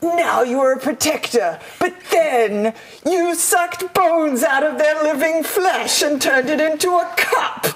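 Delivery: creepy, spooky skeleton ghoul voice. Asked by another speaker to say a line as a skeleton, in spooky skeleton voice. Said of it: "say it in the spooky skeleton voice".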